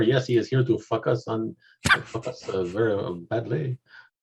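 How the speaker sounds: put-on French accent. Joking about focusing, with the French accent there. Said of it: "with the French accent there".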